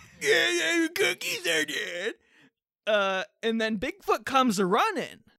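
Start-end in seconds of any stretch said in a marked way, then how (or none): 0.2-2.1 bad put-on grandma voice, higher pitched. Acting out a grandma calling Bigfoot with cookies: grandma voice like a shitty Adam Sandler. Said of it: "a shitty Adam Sandler at this point".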